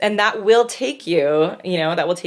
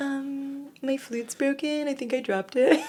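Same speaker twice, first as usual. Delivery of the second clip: high, soft, slow fake-innocent child voice. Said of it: "I was like".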